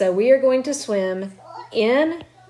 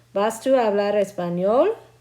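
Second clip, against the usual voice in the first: rising intonation on the word español. Teaching Spanish learners to turn a sentence into a question, rising question intonation. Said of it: "go up at the end there".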